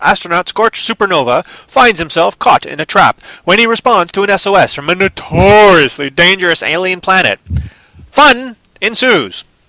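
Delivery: put-on old-time radio announcer. Reading out a movie's storyline, in an old-time radio announcer voice. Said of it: "my radio voice that I use for old-time radio".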